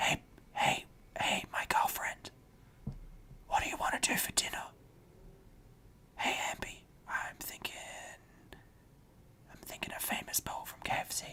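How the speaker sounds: very soft, hushed ASMR-style whisper. Acting out a sensual moment with a girlfriend for a joke: mock ASMR whisper. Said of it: "This is a perfect A S M R moment".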